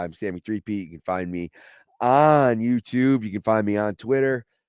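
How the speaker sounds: ordinary delivery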